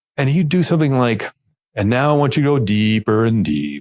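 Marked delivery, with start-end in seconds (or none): 1.8-3.8 exaggerated voice sinking deeper step by step. Imitating a presenter during a demonstration, voice dropping lower and lower. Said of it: "I'm exaggerating a bit, but it's like he's he's dropping by octaves the voice".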